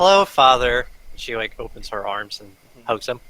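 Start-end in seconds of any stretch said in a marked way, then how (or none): 0.0-0.9 fake sweet, forced plastic-smile voice, louder. Greeting her father in character, with a forced plastic smile. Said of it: "she puts on a very plastic smile".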